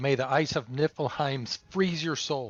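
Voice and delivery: yelling a battle cry. Playing a character casting an attack, yelling a battle cry. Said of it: "I'm gonna yell out".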